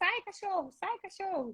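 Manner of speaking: high-pitched mock yelling, loud.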